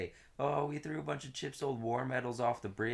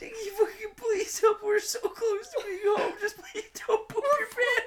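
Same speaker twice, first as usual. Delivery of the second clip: put-on shrill, very high, loud, sad pleading; 9 dB louder than usual. Imitating the speaker's mom begging him to hold it: imitating Mary sad and pleading. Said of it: "She's sad".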